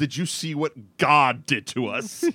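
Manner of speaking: imitated yell. Recounting a man whose coke blows out in a convertible; retelling a yell. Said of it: "he just yells".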